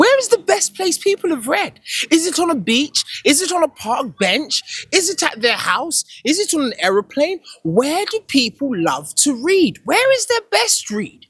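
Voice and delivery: high-pitched, quizzing, questioning tone. Asking the audience a string of questions: high-pitched questioning voice. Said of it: "my voice gets so high pitched".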